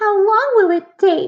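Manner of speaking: whining, very high, whiny voice. Narrator reads a daughter asking her parents about getting it fixed, in a whiny voice. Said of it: "Deely asked in a whiny voice".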